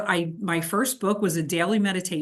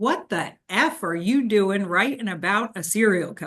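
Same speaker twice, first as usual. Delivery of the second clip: tough guy's rough, gravel-throated growl. Retelling what a war veteran said after a meeting, in a gravelly voice. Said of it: "in his gravelly voice".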